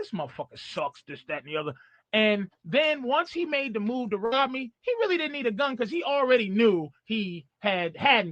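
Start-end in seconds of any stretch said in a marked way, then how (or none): 0.0-1.7 low muttering under the breath. Retelling how a robber walked up behind him: imitating muttering under breath. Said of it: "saying shit under his breath".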